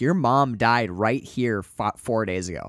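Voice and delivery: ordinary delivery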